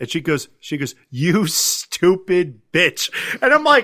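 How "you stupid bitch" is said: play-acted angry, pissed-off, cutting tone. Retelling a furious character's insult from a movie: imitating someone pissed off. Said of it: "she's pissed".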